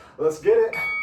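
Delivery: high, loud, hyped-up excited shout.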